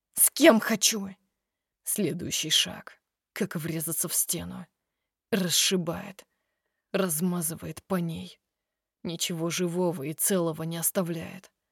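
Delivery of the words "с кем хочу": angry, raised voice, words angrily flung. After a pause, she adds to the one hurrying away from her, angry. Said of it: "добавляет уже зло".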